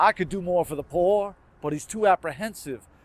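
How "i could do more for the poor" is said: ordinary talk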